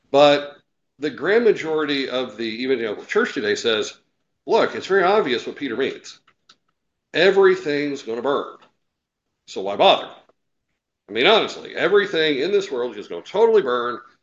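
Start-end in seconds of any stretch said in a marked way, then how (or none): none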